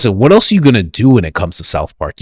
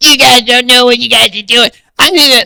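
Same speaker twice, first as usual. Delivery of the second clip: snotty, spoiled-sounding cartoon kid voice; 14 semitones higher than usual. Speaker imagining what Eric Cartman would say: Eric Cartman voice. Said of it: "To be Eric Cartman, he's gonna be like".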